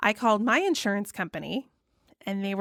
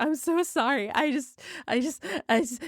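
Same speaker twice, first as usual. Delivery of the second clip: mock high, slow bawling with gasping breaths; 6 semitones higher than usual. Retelling a phone call to insurance: imitating own past sobbing. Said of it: "I'm straight up hyperventilating and bawling".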